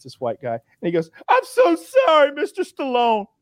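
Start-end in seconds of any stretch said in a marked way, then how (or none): 1.3-3.2 very high, tearful crying voice. Retelling a man caught with weed apologizing on a cop show: imitating a crying man. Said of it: "and he's crying".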